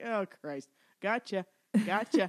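ordinary talk, nothing marked

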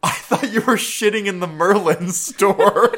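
very loud, very high, shrill yell. Retelling a restaurant bathroom mix-up, the speaker acts out what someone yelled. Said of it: "And Dylan yells".

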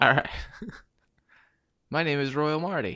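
loud, projected speaking voice pushed forward. Introducing yourself on the mic after being told to lean in, projecting the voice. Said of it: "lean in, project".

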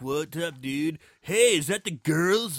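put-on stretched-out stoner dude. Mocking how movies usually write the stoner character: stereotypical stoner voice. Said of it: "the stereotypical stoner".

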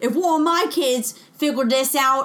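put-on Scottish accent. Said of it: "That would be my Scottish accent".

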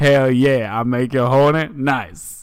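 slow actor voice, each word drawn out. Retelling a thirst tweet reading, doing an Anthony Mackie impression. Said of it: "pretty good Anthony Mackie impression".

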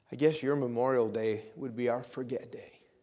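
very quiet, hushed, deliberate delivery. Recalling a woman's remark to the speaker, imitating quiet speech. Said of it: "she said very quietly".

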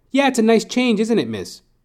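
very high, shrill, swooping, mocking sarcastic sing-song. Speaker retelling what he said back to a woman, retold sarcastic mocking reply. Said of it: "I'm mocking what you're saying".

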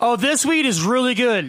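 put-on loud country voice. Describing a guy named Cooper who talked this way, imitating Cooper's loud country talk. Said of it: "He was too country and loud".

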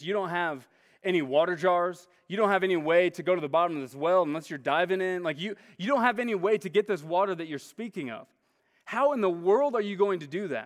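mocking, sarcastic, jabbing tone. Speaker retells a woman at a well answering an offer of water, acting out a sarcastic retort. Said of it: "You can sense, like, the sarcasm".

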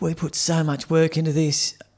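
put-on tearful voice. Retelling a school student leader's speech to the kids: imitating someone in tears. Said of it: "in tears saying".

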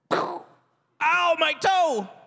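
high-pitched little yelp of pain. Showing how someone from the kingdom of heaven reacts to pain: pretend cry of pain. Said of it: "it should sound like".

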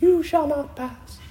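very high, squeaky little chipmunk voice. Speaker imagines chipmunks reenacting the Fellowship of the Ring before a tornado; little chipmunk voice. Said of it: "saying in their own little chipmunk voice".

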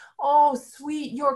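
put-on pleading tone. Acting out a character's line to a husband: imitating a pleading plea.

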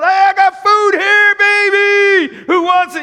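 put-on very slow, loud hollering, "baby" stretched. Retelling a story of a man handing out food to a crew, imitating someone yelling. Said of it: "And he starts yelling".

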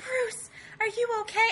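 breathy voice with air in every word. Quoting Betty asking Bruce if he is okay: breathy Betty voice. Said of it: "Liv Tyler has the perfect voice for that".

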